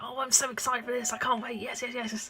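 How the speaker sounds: mock passionate, bursting, gushing excitement. Retelling how she talks to her mum about things she likes: imitating her own passionate excitement. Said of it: "I'll get so passionate and be like".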